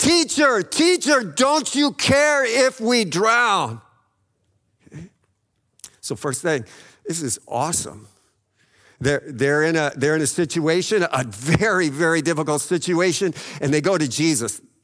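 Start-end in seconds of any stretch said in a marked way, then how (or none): 0.0-3.8 desperate, pleading, high-pitched cry. Retelling the disciples in the storm crying out to Jesus: crying out in desperation. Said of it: "They're crying out".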